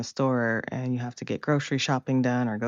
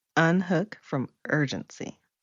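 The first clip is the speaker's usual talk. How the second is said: slowed down, higher; 4 semitones higher than usual. Repeating a phrase after being asked to say it slower: said slower. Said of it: "Say that a little slower so the people understand".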